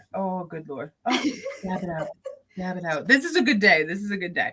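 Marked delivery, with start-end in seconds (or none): 0.1-2.1 words breaking into hard laughter. Reacting to another speaker's joke about ignoring illness: laughing hard while talking. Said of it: "I'm laughing too hard".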